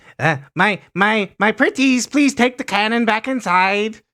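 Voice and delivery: high-pitched, loud, coaxing gnome voice. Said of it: "He'll, he'll direct the rats".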